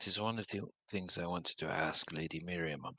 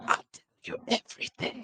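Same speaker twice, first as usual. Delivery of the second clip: hushed, soft half-whisper. Voicing a character passing by and whispering to Neavara: whispering in character. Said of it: "he's gonna kind of whisper toward Neavara".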